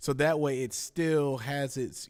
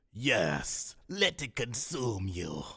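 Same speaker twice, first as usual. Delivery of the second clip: deep voice with swooping pitch; 4 semitones lower than usual. Talking Star Wars, attempting a Palpatine impression. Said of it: "I used to be able to do Palpatine really well".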